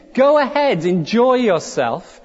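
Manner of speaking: put-on broad New York accent. Describing a red devil on a man's shoulder, the speaker voices it: broad new york accent. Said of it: "in broad New Yorkese".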